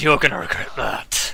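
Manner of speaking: snarled, snarling delivery. Voicing a character who blocks a sword and turns to a player: snarling. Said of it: "he turns to you and snarls".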